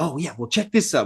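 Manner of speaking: acted, eager, bubbling-over giddy delight. Imitating an effects artist showing off his work: imitating him being giddy. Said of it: "how giddy he gets".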